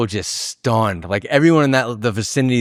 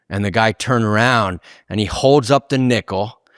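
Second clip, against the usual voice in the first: ordinary talk, nothing marked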